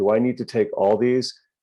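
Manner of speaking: ordinary talk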